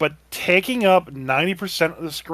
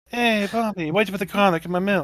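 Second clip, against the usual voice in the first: put-on Italian accent, tough mobster style; 4 semitones higher than usual. Joking how she'll talk next time, doing her in an italian accent. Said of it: "she's speaking with an Italian accent".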